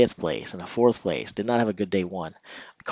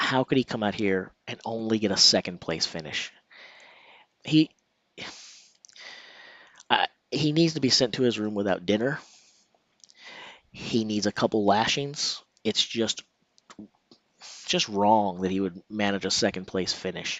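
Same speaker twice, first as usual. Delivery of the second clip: ordinary talk, nothing marked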